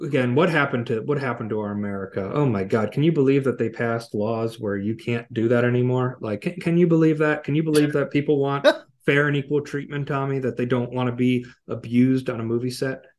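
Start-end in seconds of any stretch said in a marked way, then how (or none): none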